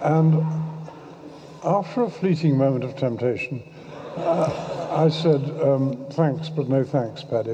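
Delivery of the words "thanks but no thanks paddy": ordinary talk, nothing marked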